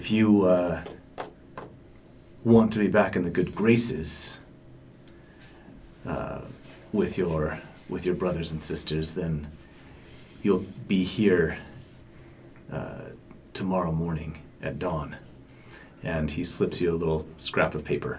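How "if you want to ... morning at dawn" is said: whispering really low. Voicing a character at a bar who leans in: whispering really low. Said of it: "whispers really low".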